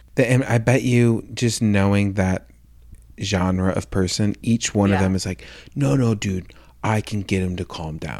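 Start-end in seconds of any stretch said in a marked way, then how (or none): 5.7-8.2 slightly gravelly put-on straight guy voice. Imitating that genre of person: slightly gravelly straight man voice. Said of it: "my, like, straight man voice".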